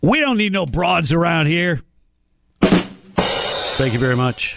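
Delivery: best-effort put-on West African accent. Quoting a manager's remark on a podcast, in a put-on west african accent. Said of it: "With my best West African accent".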